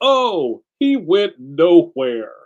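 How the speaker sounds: very slow, booming play-by-play, every word stretched. Retelling a football video game's repeated line: imitating the Joe Montana Sports Talk Football announcer. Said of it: "the announcer guy would say the same thing".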